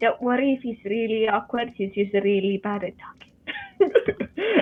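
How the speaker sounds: put-on, slow, hushed half-whispered aside. Half-whispering in character to the priestess about an awkward companion: half-whispering in character. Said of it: "I whisper to her".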